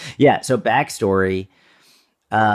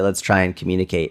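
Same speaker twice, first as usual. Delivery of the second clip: normal talking voice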